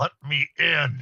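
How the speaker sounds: pressing, urgent, younger-sounding voice. A narrator voicing a woman behind a door asking to be let in, urgent younger voice. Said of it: "She sounds more urgent and she starts sounding younger".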